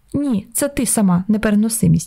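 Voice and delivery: plain reading voice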